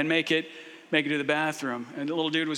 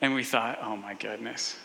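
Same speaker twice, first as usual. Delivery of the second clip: plain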